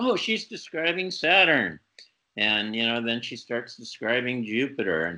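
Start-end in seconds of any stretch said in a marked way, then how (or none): 0.0-1.8 put-on eager, animated shout, high and swooping. Retelling an astronomy lover reacting to a vision: imitating Joseph Bates shouting excitedly. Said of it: "So he starts shouting".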